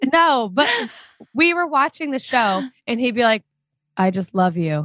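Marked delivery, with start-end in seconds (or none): 4.0-4.9 flat, level, lifeless deadpan monotone. Imitating someone from a show you were watching, deadpan, monotone Johnny impression. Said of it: "have a deadpan".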